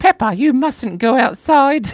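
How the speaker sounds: very high, squeaky, loud cartoon mother voice. Asked to do the Mama Pig voice, speaking in a Mummy Pig voice. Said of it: "Do Mama Pig voice".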